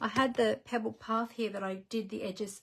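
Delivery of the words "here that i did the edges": ordinary talk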